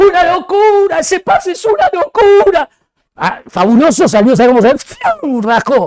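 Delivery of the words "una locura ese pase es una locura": very high, shrill, full-throated shouting. Retelling how a commentator shouted about a pass: imitating Barsky shouting. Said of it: "Barsky empezó a gritar".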